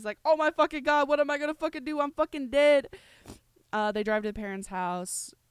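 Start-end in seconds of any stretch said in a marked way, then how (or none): 0.2-2.9 very loud, high-pitched, frantic panicked voice. Retelling a story, acting out Shane's panic attack when his dad shows up. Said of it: "Shane starts having a panic attack".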